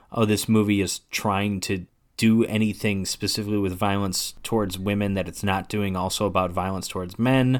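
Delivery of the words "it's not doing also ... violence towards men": ordinary talk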